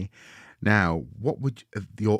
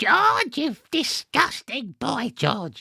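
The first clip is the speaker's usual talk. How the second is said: put-on very high, swooping, nasty old granny voice. Showing the voice used for the old lady in the reading: George's grandma voice. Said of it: "the voice of, uh, George's grandma in George's Marvelous Medicine".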